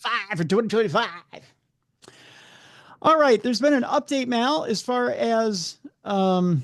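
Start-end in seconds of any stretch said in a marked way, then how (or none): 0.0-1.1 put-on, announcer-style radio voice. Repeating a catchy slogan: put-on radio voice. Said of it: "Get in my radio voice, my puker voice".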